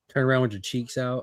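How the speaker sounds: ordinary talk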